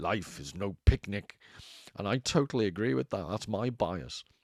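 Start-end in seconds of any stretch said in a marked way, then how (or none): 0.0-1.4 put-on thick Hungarian accent, laid on, slow. Quoting a saying of Thomas Szasz in his thick American-Hungarian accent. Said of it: "he used to say in this really thick American Hungarian accent".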